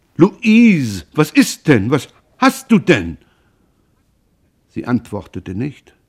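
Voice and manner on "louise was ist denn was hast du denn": startled, frightened, alarmed, high, raised searching tone. Roland turns to find his wife Louise weeping; alarmed. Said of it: "Roland war ganz erschreckt".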